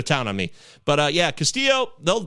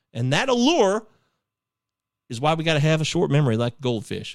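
fake Southern-sounding accent. Talking about a player with many strikeouts, quote a saying in a Ted Lasso impression, uncertain Southern accent. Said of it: "Is this a Southern accent?".

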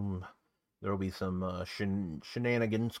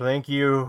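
put-on slurring, higher and louder; 5 semitones higher, 10 dB louder than usual. Retelling a wrestler answering a fan's shouted compliment, imitating slurred speech. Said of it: "he just slurred his words and says".

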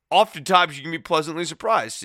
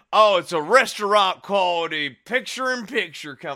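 put-on sarcastic commentator voice, higher; 4 semitones higher than usual. Retelling a commentator's remark on picture-in-picture: imitating Jim Ross's dripping sarcasm. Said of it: "You could hear the sarcasm dripping".

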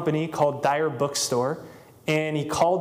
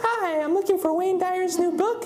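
very high, put-on girlish voice. Acting out a man calling a bookstore back to ask for a book, in a put-on girl voice. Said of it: "he'd call back in a girl voice".

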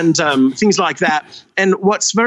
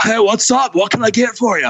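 put-on laid-back beach-bum surfer voice; 4 semitones higher than usual. Retelling greeting customers at a drive-through window for fun: surfer voice. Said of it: "or I'd be a surfer".

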